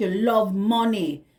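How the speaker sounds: put-on Jamaican-accented voice. Speaking to Virgo about a Jamaican man, going into a put-on Jamaican accent. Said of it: "I just want to go into my accent".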